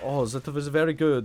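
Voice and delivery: put-on Swedish accent in English. Mocking a couple playing Valorant together: imitating a Swedish gamer couple. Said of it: "but they're actually, like, Swedish".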